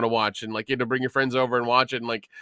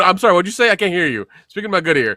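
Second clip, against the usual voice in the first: put-on old man voice, hard of hearing; 6 semitones higher, 7 dB louder than usual. Mocking a friend by acting like old Dion: imitating old Dion. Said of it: "he acts like old Dion".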